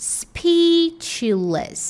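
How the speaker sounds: first syllable of speechless hit hardest. Pronunciation training drill on word stress, stress on speech in speechless. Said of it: "Qual que é o mais forte? O primeiro".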